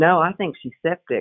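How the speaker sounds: ordinary delivery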